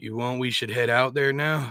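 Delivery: plain reading voice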